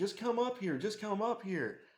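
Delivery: repeated high insistent yell, pushing hard. Retelling him calling from upstairs: imitating someone yelling. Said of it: "he kept yelling at me".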